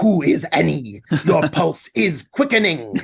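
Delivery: low voice with every syllable clearly enunciated. Speaker shows how Venom replies when Eddie mentions Annie: Venom voice, every syllable enunciated. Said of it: "for the Venom voice, he does exactly the opposite and he enunciates everything really clearly".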